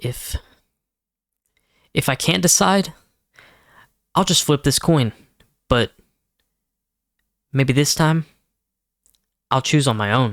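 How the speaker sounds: resolute, decisive, determined, conclusive delivery. Reading script lines with a bracketed direction: determined and conclusive. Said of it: "Determined and conclusive".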